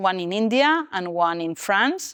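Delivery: normal talking voice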